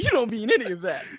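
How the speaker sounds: very high, very loud, shrill insistent disbelief. Acting out a partner who won't accept being left: imitating someone refusing a breakup. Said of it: "You fucking sound like them".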